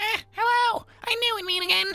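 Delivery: very high, throat-straining, strained little-man voice. Speaker voicing a little shopkeeper character on first meeting: strained character voice. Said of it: "that voice is gonna hurt my vocal cords".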